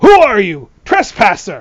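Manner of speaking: put-on old mouse soldier voice, loud and swooping. Voicing an older armored mouse who stops a stranger: voicing an older armored mouse. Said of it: "points the spear".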